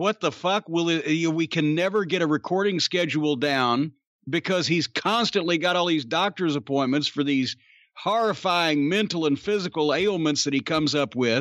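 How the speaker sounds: plain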